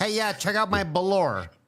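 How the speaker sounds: put-on "velour" in Mexican accent. Speaker mimics a man who mispronounces velour: mock mexican accent. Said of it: "He pronounces like a fucking Mexican".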